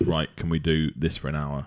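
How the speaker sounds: ordinary talk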